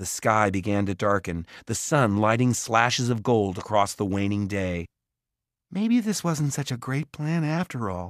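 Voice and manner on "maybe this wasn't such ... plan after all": quiet, gentle, soft, slightly high. Watching goblins by the fire, she speaks to her companion; softly. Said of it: "Mallory said softly".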